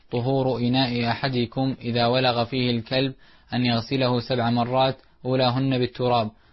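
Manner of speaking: ordinary talk, nothing marked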